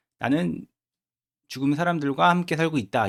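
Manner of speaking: ordinary talk, nothing marked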